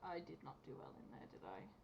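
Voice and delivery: very quiet, hushed, under the breath. Speaking in character on the way there, after a fight: said very quietly. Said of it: "I'm just gonna say very quietly".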